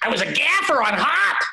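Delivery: very high, squeaky, offended, upset comedian voice. Repeating the gaffer's complaint on purpose: T J Miller voice. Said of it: "It kinda sounded like T J Miller".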